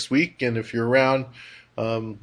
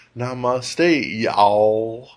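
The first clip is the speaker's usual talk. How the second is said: slow Southern drawl, y'all drawn out. Demonstrating how to say a phrase: southern drawl. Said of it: "it's like do the southern drawl".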